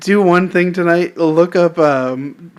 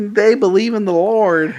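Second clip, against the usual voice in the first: horrible put-on country accent; 4 semitones higher than usual. Co-host joking about Duck Dynasty on a recorded show, horrible country accent. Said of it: "It was a horrible country accent".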